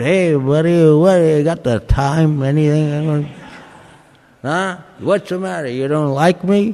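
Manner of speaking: imitated slurred drunk speech. Imitating a drunk partygoer asking the time: imitating drunk slurred speech. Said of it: "You spoke in slurred language".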